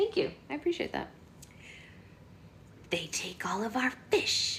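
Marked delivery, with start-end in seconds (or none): 2.9-4.6 hissing mermaid voice through the words. Reading a story aloud, voicing the mermaid's line in a hissing mermaid voice. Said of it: "the mermaid hissed".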